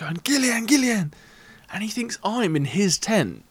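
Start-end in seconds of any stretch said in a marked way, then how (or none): 0.2-1.1 acted-out mock screaming, much higher pitch. Retelling a tent dispute, a steward comes over yelling at the speaker: retelling a steward's scream. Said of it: "he's screaming at me".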